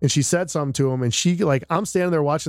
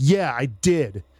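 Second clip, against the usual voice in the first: mock defiant, brash, attitude-heavy tone. Retelling a parent's reply to being challenged: imitating a man with major attitude. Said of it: "this major attitude".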